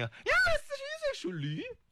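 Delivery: very high, wide, tactless blurted remark.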